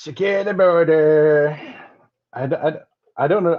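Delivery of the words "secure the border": slow, mock New York accent. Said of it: "I don't know another New Yorker that talks like that".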